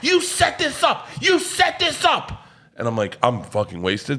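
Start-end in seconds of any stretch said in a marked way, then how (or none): 0.0-2.5 put-on furious angry yell, higher. Retelling a passenger who loses it at the flight attendant: imitating a furious yell. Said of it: "he loses his shit on the flight attendant".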